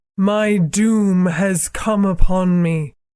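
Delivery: eerie, horribly dead-calm, high witch voice. A narrator reads the witch's words: horribly calm. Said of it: "said the witch in a voice of horrible calmness".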